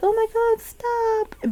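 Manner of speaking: high-pitched mock scream. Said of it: "screaming in the corner".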